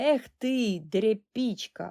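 contemptuous through gritted teeth. Reading a story, one brother answers the other: contemptuous, through gritted teeth. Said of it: "презирливо процедив крізь зуби".

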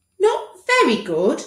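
slightly pleading. Dr. Lupus asks his patient Tom to rate the hospital care: slightly pleading. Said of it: "a hint of pleading in his voice".

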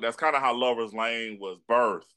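ordinary delivery

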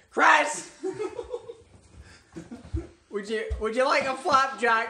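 slow, drawn-out yell right into the microphone. Showing listeners what yelling into the mic would sound like: yelling into the mic. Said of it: "yelling into the mic. That would sound like this".

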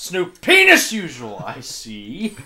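needless over-the-top heavy stress on "snooping". Friends discussing a character's line, one quotes him, imitating over-stressed 'snooping'. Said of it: "It's the emphasis he puts on it that's completely unnecessary".

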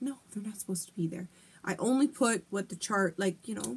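plain

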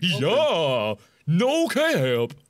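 modern slangy talk, long drawn-out stretched "yeah". Joking about Wade with the others, do your modern day Wade impression. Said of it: "That's my modern day Wade impression".

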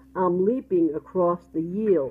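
usual speaking voice

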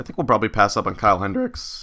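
voice cracking. Weighing free-agent pitchers while planning offers: voice cracking. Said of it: "nice voice crack".

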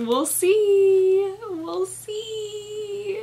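extremely nervous, very high, very slow, drawn-out. You are hoping to get out of a six-month reading slump; speak extremely nervously. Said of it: "She said extremely nervously".

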